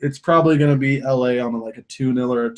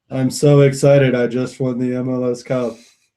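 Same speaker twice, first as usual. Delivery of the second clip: flat, inflectionless monotone, all on one note; 3 dB louder than usual. Joking about how Landon Donovan speaks, doing a monotone Landon Donovan impression. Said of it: "with no inflection in his voice. Very monotone".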